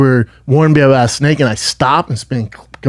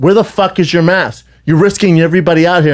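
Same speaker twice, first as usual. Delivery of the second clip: put-on woman's yelling voice; 3 semitones higher than usual. Retelling a stranger demanding where the mask is: imitating a woman yelling. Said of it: "yelling at me".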